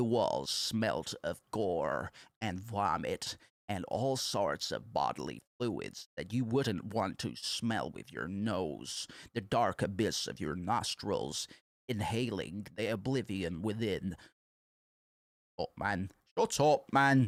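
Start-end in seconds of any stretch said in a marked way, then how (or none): 0.0-14.2 mocking vocal fry voice, lower and quieter. Mocking a lore playthrough narrator, imitating vocal fry narration. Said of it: "he's going like this".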